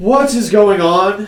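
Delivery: high, snooty, hoity-toity, disgruntled, annoyed voice. Voicing someone calling from a far tent: disgruntled hoity-toity voice. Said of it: "just a disgruntled kind of hoity-toity voice".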